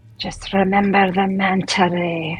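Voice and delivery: whispering in put-on voice. Voicing a character who whispers a reminder: character whispering. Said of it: "And then she whispers".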